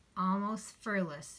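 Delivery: ordinary delivery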